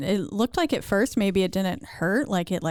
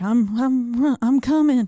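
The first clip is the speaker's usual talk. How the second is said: put-on drunk man, barely coherent, louder, much slower; 4 semitones higher, 5 dB louder than usual. Retelling what a very drunk man kept saying, imitating a very drunk man. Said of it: "drunk out of his mind... barely able to form sentences".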